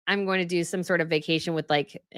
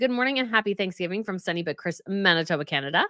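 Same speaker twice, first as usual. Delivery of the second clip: ordinary talk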